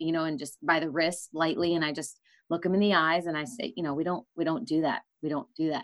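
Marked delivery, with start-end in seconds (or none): none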